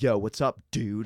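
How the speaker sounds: brash, very loud American bro voice. Retelling how they sound on tape: imitating own american way of talking. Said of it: "I'll watch myself in the tape and I'm like".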